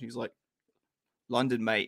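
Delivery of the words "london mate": put-on Australian-sounding accent. Retelling an actor's answer about where he grew up: Idris Elba accent sounding Australian. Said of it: "which I made sound Australian".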